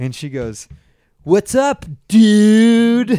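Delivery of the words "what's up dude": very high, very loud teasing voice, long "dude". Retelling how a girl at a taqueria greeted him: imitating a girl mocking. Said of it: "making fun of me".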